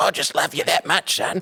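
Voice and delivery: attempted Scottish accent, coming out mostly Australian. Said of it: "that wasn't a good [name]".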